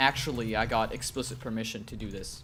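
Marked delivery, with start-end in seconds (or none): none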